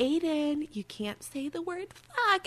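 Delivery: really high, soft voice, suppressing a laugh. Recounting scolding aiden for swearing, retelling high voice, holding laughter. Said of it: "my voice gets really high, so I'm trying not to laugh".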